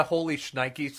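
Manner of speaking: ordinary delivery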